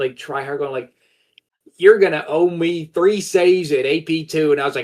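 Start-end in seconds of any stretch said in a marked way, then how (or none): 1.8-4.5 over-the-top, pitched-up put-on Southern accent. Retelling a drunk game exchange: imitating an over-exaggerated southern accent. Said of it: "over-exaggerated Southern accent".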